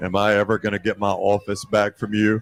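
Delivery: dry, flat-pitched, level delivery. Retelling what Coach Saban said on walking in: imitating Saban's dry, quiet voice. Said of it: "in that, just that dry, quiet voice goes".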